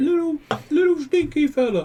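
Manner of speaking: big, giant hamster character voice. Voicing a giant hamster speaking to someone, in a big giant hamster voice. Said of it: "big giant hamster voice".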